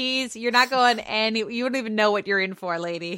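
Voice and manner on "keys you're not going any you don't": plain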